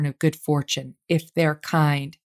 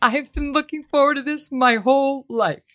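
crying through words, very high voice; 9 semitones higher than usual. Greeting two guests just introduced, crying while talking. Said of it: "I'm crying".

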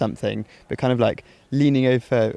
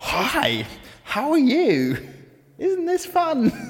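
loud, over-mouthed, over-enunciated, very high-pitched chatter. Retelling how she spoke to a deaf woman, mimicking loud over-enunciation. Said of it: "over-mouthing and over-enunciating, speaking in a raised voice".

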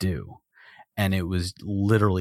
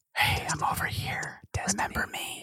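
put-on whisper, quieter. Explaining why work is impossible near the console, imitating the PlayStation whispering. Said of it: "the PlayStation just whispers".

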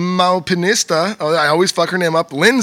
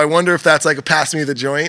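plain

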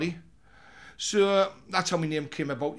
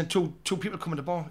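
ordinary delivery

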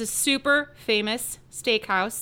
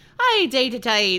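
loud put-on Irish accent; 7 dB louder than usual. Explaining Ireland's bread tax, voice the scientists in an Irish scientist impression. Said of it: "that's my Irish scientist impression".

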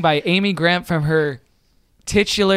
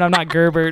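ordinary talk

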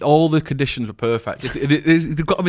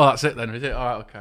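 ordinary delivery

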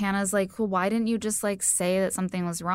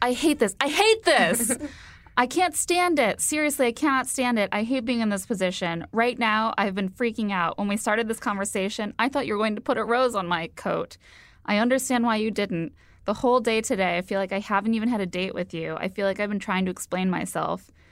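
ordinary talk, nothing marked

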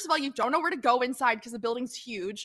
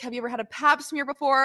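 ordinary talk, nothing marked

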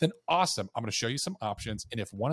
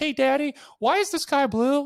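bad, very high, very loud little-kid toddler voice; 14 semitones higher, 9 dB louder than usual. Acting out a curious two-year-old questioning their daddy: worst little kid voice. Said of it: "the worst kid's voice ever".

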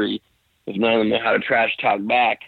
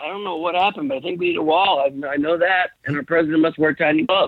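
put-on dazed, spellbound ramble, high and rushed; 7 semitones higher than usual. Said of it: "you just completely get in a daze".

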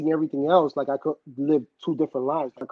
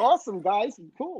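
put-on, pitched-up valley girl voice; 7 semitones higher than usual.

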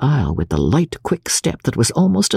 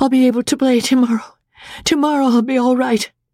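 tense, strained voice, much higher pitch; 11 semitones higher than usual. Julie cries out to the others, strained voice. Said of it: "cried Julie in a strained voice".

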